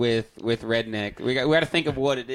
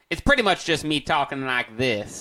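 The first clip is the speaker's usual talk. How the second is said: put-on dumb-sounding Indiana accent. Show host demonstrating the voice he wants for a whole episode, put-on Indiana voice. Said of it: "I call it my Indiana voice".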